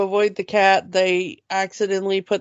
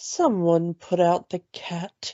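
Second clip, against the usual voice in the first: very calm, completely unfazed delivery; 4 dB quieter than usual. Retelling a cartoon scene as a cat runs around with its tail on fire: calm Lady Tremaine impression. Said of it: "Lady Tremaine's voice just very calmly go".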